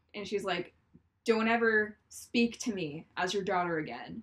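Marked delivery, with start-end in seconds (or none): none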